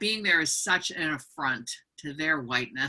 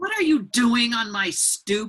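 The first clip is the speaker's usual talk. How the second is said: mock rude, suspicious, pitched-up tone; 7 semitones higher, 4 dB louder than usual. Acting out a woman's reaction when greeted at her stoop, imitating a rude tone. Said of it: "Was the tone of voice".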